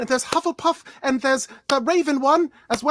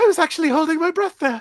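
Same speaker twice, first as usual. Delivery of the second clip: higher-pitched voice; 2 semitones higher than usual. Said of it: "I think my voice has gotten higher".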